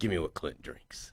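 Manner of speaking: hushed breathy whisper, big-screen movie-star style. Retelling ordering a drink from a bartender: Clint Eastwood voice. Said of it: "in my best Clint Eastwood voice".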